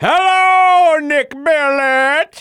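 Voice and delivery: put-on odd old-fashioned rural voice, very high. Mimicking a co-host's greeting to a guest, in a weird old-timey country voice. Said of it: "weird kind of country old timey".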